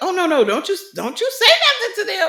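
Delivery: very high, swinging, put-on frightened pleading tone. Retelling what a woman in a show said: imitating a scared woman. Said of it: "she was so scared".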